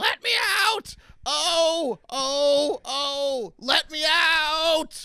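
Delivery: slow, high, desperate screaming.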